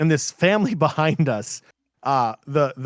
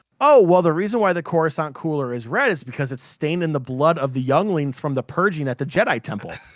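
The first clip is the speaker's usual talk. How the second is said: plain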